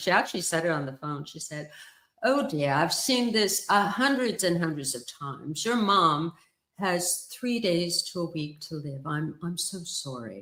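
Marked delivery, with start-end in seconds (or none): 2.2-10.4 put-on woman speaking with a British accent. Quoting what a woman said on the phone: british accent. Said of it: "I have to do it in the dialect. She was a woman with a British accent".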